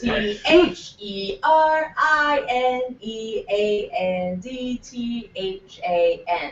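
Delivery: slow deliberate spelling. Spelling out a name after being told it was too fast: spelling slowly. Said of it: "Since you said last time I was too fast".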